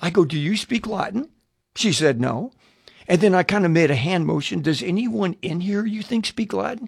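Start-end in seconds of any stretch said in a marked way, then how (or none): 0.0-1.3 hushed whispering, acted out in a low breath. Retelling leaning over to ask the woman beside them in a packed room, whispering. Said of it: "I'm whispering again".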